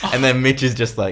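ordinary talk

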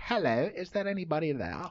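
a monarch-like regal telephone voice. Joking about the first monarch to use a telephone: Queen Victoria impression. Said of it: "That's my best Queen Victoria impression".

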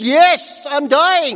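very loud, high-pitched triumphant shout. Retelling the voice he used, like a shootout-winning goal: mock-triumphant loud shout. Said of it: "That's the voice he used".

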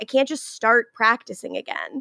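normal talking voice

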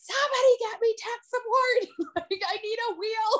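desperate, loud shouted screaming. Retelling how they screamed at anybody nearby, retelling a scream. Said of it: "And I just started screaming at anybody".

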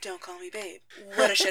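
mock deadpan, low, flat, evenly enunciated. Imitating how an actress delivered her lines: imitating her flat line delivery. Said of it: "delivered her lines, like".

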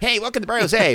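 put-on very high old-time radio announcer voice. Imitating own glitchy recorded intro: imitating a 1920s ballgame announcer. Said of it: "like I was announcing a Yankees game in the twenties".

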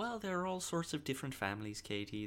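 put-on soft, generic leprechaun-style Irish accent. Quoting the TV show voiceover answering a viewer's letter: Mrs. Doubtfire impression, leprechaun-like. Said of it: "more like just generic Leprechaun".

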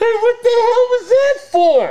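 very high, slow, loud indignant yelp. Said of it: "my buddy's like".

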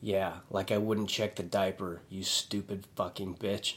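mock super grumpy, soft mutter, half under breath. Retelling what a husband said about his wife, acting out a super grumpy remark. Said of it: "And he's super grumpy".

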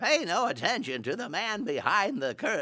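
very high, swooping, swinging pitch. Recalling voicing a dog mayor character, Wizard of Oz voice. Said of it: "So I kind of did that voice".

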